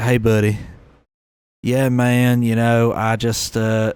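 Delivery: put-on drawled, slow Southern American accent. Imitating the Southern people the speaker meets, in a Southern accent. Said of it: "because I live in the South ... They'll be like ... they just talk like that".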